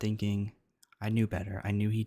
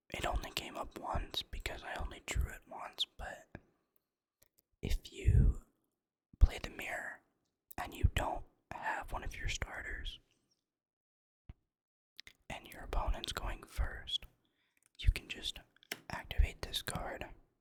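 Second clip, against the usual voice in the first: whispering. Explaining a card to the audience, whispering. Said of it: "I'm gonna go ahead and try to whisper".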